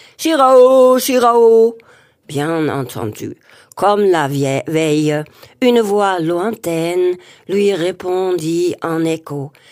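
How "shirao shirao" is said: very loud, far-carrying calling shout. The narrator reads a character crying out as his brother did, shouting. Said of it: "mêmes cris que son frère".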